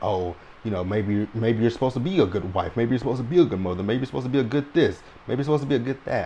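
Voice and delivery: fast, demeaning, mocking put-on delivery. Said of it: "that really was kinda demeaning to say".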